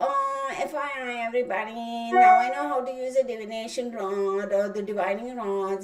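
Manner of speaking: acted, catty, sneering, snide, slow show-off voice. Imitating people who post about divining rods online: imitating a snide, bitchy tone. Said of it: "really B I T C H right now, using that tone of voice".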